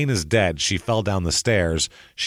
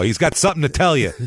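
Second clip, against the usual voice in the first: fed-up, angry Italian dad voice, higher pitch; 8 semitones higher, 4 dB louder than usual. Describing how an Italian dad would turn his son in: imitating an Italian dad. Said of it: "like an Italian dad would drag him down by his collar and go".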